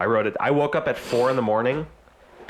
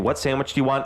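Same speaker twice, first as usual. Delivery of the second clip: plain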